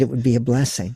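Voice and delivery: ordinary talk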